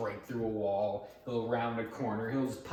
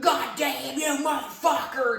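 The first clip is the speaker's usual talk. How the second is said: crazed shriek, very high-pitched and loud; 6 dB louder than usual. Retelling how a game villain always screams at you: imitating Marguerite screaming.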